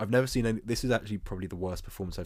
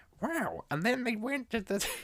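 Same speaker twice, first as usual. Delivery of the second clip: very high, squeezed, badly done put-on character voice. Imitating the film's voiceover narrator: bad Marge Simpson impression. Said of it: "I can't do the impression".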